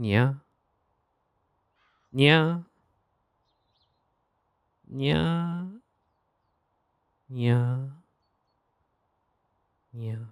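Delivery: high catboy noises on every yeah. Fulfilling a redeemed request, doing catboy noises. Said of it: "Catboy noises".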